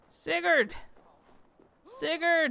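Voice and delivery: loud high-pitched calling. Unable to see where he is, the speaker is calling out a name. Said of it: "Where is he?".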